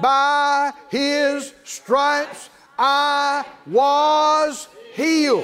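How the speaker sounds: slow and emphatic, every word stressed.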